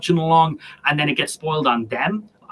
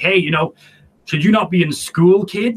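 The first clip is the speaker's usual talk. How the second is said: put-on big, teasing, ribbing voice; 2 semitones higher than usual. Retelling a taunt from an older online player: imitating a big deep voice. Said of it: "big, deep voice".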